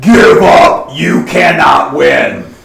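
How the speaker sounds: resounding voice. A game master voices a call as a player points the swan at an ogre, booming voice. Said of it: "this booming voice goes".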